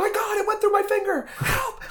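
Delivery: put-on, very high, panicked wail, half sobbing. Retelling a scene from a show, quoting Hester's outburst: imitating Hester screaming and crying. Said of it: "she's like screaming and crying".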